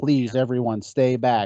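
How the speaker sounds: calm, soothing announcer voice. Quoting an announcer telling everyone to stay back: calm soothing voice of Dave Grimm. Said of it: "Very calmly saying this to everyone".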